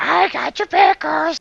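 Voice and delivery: very high, very loud, creaky, rough, taunting goblin voice. Describing the goblin voice a player will use, the speaker gives a taunting goblin voice. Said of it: "will be a normal goblin voice. Would be like taunting".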